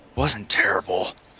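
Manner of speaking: muttered quietly under breath. Game master voicing a character who sheathes his sword, muttered under his breath. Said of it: "under his breath".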